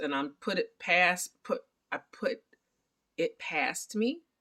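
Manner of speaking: stammering, stuttering with stumbling repeats. Summarizing a story, the speaker relays a man's words while stuttering. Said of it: "there's my stutter".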